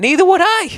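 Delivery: squeaky, very high-pitched, voice jumping very high. Agreeing with someone who mentioned losing their father, voice going up high. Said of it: "Why did my voice go up so high?".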